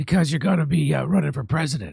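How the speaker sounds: hoarse mocking impression. Teasing the governor he is talking with: imitating the governor's hoarse voice. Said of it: "That's me doing you".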